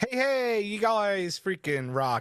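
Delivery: very high put-on Australian accent. Thanking the show's supporters by name, in an Australian accent. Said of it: "I did that in an Australian accent for some reason".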